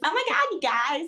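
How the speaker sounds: mocking influencer voice. Showing how an influencer character from a spoof film talks: imitating a vapid influencer character. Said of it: "talks like this".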